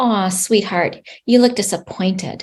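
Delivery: very calm, soft, tender, gentle comforting voice. Demonstrating how to give someone words for their feelings, calm gentle voice. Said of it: "very calmly and in that gentle voice".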